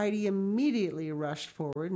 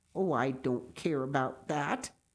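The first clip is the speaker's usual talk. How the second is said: grumbling, much lower; 5 semitones lower than usual. He replies to Heidi's offer, grumbling. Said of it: "he grumbled in reply".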